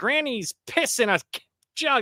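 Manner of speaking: high, wacky, eccentric voice. Mocking an actor's eccentric movie performance: mocking Jesse Eisenberg's Lex Luthor. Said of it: "when you do an eccentric person in a movie".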